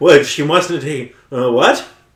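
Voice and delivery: high, loud, sheepish, flustered, rattled fake surprise.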